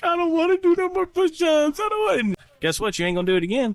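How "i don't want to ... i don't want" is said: put-on very high, sobbing, whining little-kid voice. Retelling how the nephew complains about push-ups: imitating a crying kid. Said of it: "you just see him cry like".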